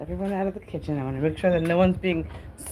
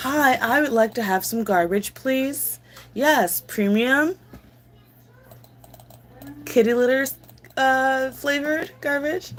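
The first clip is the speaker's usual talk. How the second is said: put-on dog voice, pitched up; 7 semitones higher than usual. Joking about dogs loving garbage, the speaker does a dog impression. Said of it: "that's my impression of a dog".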